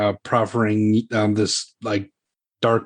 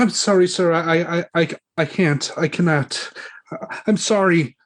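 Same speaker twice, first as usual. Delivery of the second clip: put-on timid, meek young woman, pitched up, stumbling; 7 semitones higher than usual. Narrating a game scene, the speaker voices a young woman near the body; timid young woman. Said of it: "the young woman is like is looking pretty timid".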